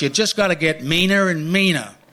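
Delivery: put-on Canadian accent. Quoting what John said, in John's Canadian voice. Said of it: "this is in a Canadian voice".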